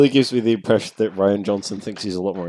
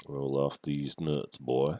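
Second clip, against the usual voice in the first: very quiet, hushed, put-on Louisiana drawl; 3 semitones lower, 11 dB quieter than usual. Playing a character while the others guess the accent: attempted Louisiana accent. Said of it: "I'm trying to do the old uh".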